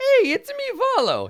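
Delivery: very high and loud voice, pitch swooping around. Claiming to be good at impressions and showing one, a Volo impression. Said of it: "I'm really good at doing impressions".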